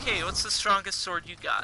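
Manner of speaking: normal talking voice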